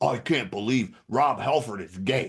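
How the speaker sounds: angry, indignant outburst, fuming in disbelief. Retelling a friend's reaction to news: imitating an angry friend. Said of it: "one of my friends was so angry".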